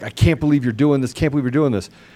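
put-on angry voice. Retelling friends' calls after they got mad: imitating angry friends. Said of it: "friends that really mad at me".

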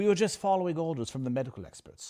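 put-on British accent, plain delivery. Quoting a politician's line about following the experts: british accent. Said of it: "We now say it with a British accent".

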